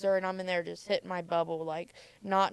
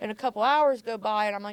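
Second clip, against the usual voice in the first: ordinary talk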